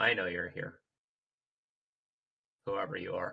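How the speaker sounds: low, mumbled mutter under the breath. A player's character, staring out a window, speaks to whoever might be there, muttering under breath. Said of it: "sort of mutter under my breath".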